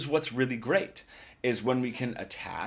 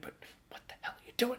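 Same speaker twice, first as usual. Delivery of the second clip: urgent, hushed whisper, right in close; 14 semitones higher, 8 dB quieter than usual. Explaining soft phrasing in a solo, the speaker voices the phrase whispering. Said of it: "Maybe I'm whispering it".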